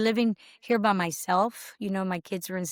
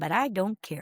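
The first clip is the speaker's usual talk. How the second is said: put-on strong Mexican Spanish accent. Quoting a man from mexico, speaking in his strong mexican accent. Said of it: "he had a real strong accent".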